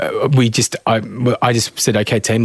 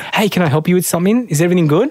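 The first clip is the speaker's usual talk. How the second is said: cheerful, upbeat, high-energy, higher pitch; 8 semitones higher than usual. Showing how an upbeat person greets a room, as opposed to low energy: upbeat high-energy greeting. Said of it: "As opposed to if they come in and go".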